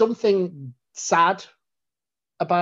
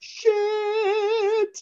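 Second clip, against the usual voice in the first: very high shocked yelp. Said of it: "and Rose is just like".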